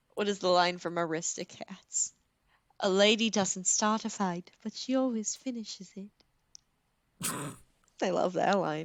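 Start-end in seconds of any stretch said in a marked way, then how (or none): 2.8-7.3 clumsy, horrible put-on British accent. Quoting her favorite line from Aristocats: horrible British accent. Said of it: "That was a horrible accent".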